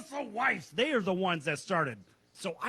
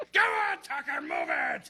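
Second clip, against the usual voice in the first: mock very high, swooping, barking drill-sergeant yell; 10 semitones higher than usual. Picturing cheering on his grandson running to first base: drill sergeant shout. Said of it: "like a drill sergeant coming out of nowhere".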